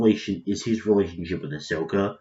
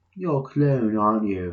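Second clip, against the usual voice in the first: bad, terrible, put-on fake British accent; 2 semitones higher than usual. Acting out a bit between two characters, in a terrible British accent. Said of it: "sorry for my terrible British accents".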